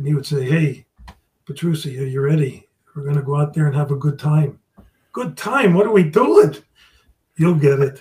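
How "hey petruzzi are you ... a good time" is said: put-on low voice, lower pitch. Quoting a knowledgeable man he admired, imitating his real low voice. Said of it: "he always talked in a real low voice".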